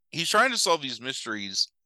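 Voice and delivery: ordinary delivery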